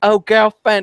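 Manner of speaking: failed, clumsy feminine voice, high and campy, done badly. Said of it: "he tried to go like".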